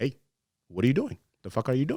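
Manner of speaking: mock worked-up, agitated, annoyed, rising angry tone. Recalling confronting a man who cut in front, retelling an agitated outburst. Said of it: "I got a little bit agitated".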